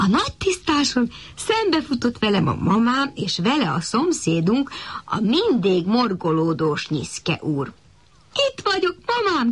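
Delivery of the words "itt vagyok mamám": very high shout, calling out from far away. Returning to the clearing, the narrator calls out to his mother, shouting from afar. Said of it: "kiáltottam már messziről".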